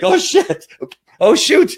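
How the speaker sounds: very high, loud, panicked dog-voice squealing cry.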